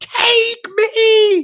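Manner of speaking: very high, shrieking, screamed cry. Retelling a movie scene where a character screams at another: imitating a scream. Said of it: "And then she screams at her".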